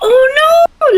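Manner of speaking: piercing, very high, loud shriek. Recounting a scene, the speaker acts out Elsa: imitating Elsa's scream. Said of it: "Elsa screaming like".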